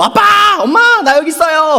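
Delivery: yelling at the top of her lungs, high and loud.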